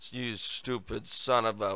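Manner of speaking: put-on mutter under breath. Quoting what Joe said about Peter Doocy, imitating someone muttering under his breath. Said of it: "saying about Peter Doocy under his breath".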